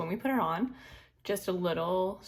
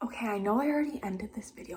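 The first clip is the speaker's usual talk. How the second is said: speaking in a whisper. Adding a note after ending her video while her boyfriend sleeps nearby, whispering. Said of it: "I'm whispering because my boyfriend's asleep".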